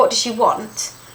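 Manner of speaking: normal talking voice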